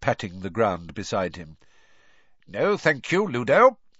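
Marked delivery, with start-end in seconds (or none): 2.5-3.7 curt, sharp, raised voice with impatient bite. Narrating, a man declines an offer to sit down, with a bite of impatience. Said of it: "there was a bite of impatience in his voice".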